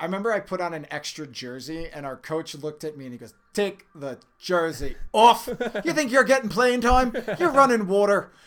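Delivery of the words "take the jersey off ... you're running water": put-on loud, high-pitched Irish accent. Retelling what his coach said to him, the speaker slips into an Irish accent. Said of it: "I switched into an Irish accent right there".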